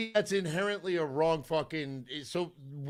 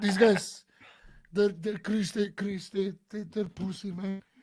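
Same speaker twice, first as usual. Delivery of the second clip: choppy, halting, stop-start, repetitive, stumbling delivery; 2 semitones higher than usual. Doing an impression of a former pitcher complaining about today's pitchers: Luis Tiant impression. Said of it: "that's my Louis impression".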